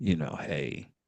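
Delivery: put-on sexy voice, low, deep and soft. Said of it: "Don't I sound sexy on this microphone".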